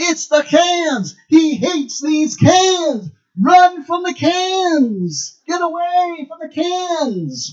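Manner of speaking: slow, loud, high yelling, every cans stretched. Retelling a scene where a man being shot at yells to others, retelling a yell. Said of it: "he starts yelling".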